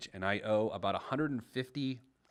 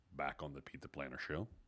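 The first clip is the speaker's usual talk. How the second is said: put-on deep voice, lower and quieter; 8 semitones lower, 10 dB quieter than usual. Welcoming listeners back to the show in a put-on deep voice. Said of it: "I just wanted to use a deep voice there".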